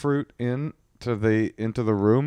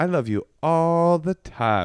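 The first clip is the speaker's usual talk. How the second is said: hammy put-on cuteness of a little kid, high and slow; 7 semitones higher than usual. Imitating the kid's bedtime charm offensive: imitating a child's put-on cuteness. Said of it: "a hacky character of cuteness".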